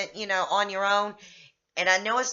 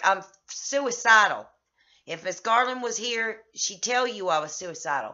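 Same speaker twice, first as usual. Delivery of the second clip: ordinary talk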